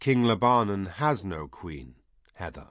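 plain

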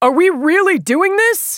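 frightened, panicked, very high shout. Narrator reads a Resistance soldier's line over the comm, panicked shout. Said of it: "the Resistance soldier's panicked voice over the comm".

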